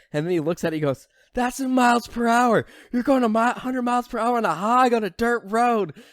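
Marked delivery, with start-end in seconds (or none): 1.4-5.9 very high, shrill, loud, hammy badly acted yell. Retelling what a guy said while riding a hog on a dirt road: retelling a yell. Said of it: "Like he just like yells it".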